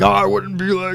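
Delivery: high, dopey, dim-witted dumb voice. Imitating the other speaker's dumb voice back at them. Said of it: "You were like".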